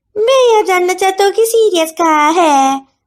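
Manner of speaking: taunting, mocking tone pitched high. Reading a story where a woman repeats his question: mocking imitation. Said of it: "उसकी नकल उतारते हुए कहा".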